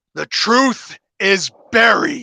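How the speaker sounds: loud, high, angry angelic voice screaming. Narrating what a voice in the listener's head screams out: loud, pissed-off angelic scream. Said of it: "a very loud, almost pissed off angelic voice that screams at you".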